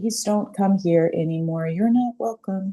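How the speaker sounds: whispering. Showing how to first whisper a boundary to something unwanted: whispering. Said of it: "first whisper in".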